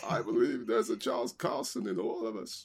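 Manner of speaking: put-on, sing-song, swooping voice. Joining a chat about village eccentrics, putting on an Aunt May voice. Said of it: "I'm going to put on my Aunt May voice".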